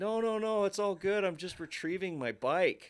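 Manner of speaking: very high, loud, distant-sounding yell. Retelling calling up from the bottom to people above: retelling own yell from below. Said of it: "I'm yelling from kind of the bottom".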